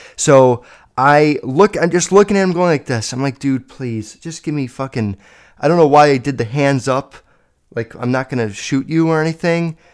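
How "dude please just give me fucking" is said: put-on frightened voice, quieter. Retelling pleading with a kid who kept cursing: imitating a scared plea. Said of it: "I'm scared".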